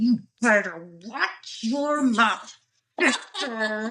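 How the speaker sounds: slow, angry, spoken through gritted teeth. Recalling Mom's warning phrase, imitating speaking through gritted teeth. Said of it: "teeth like this and say".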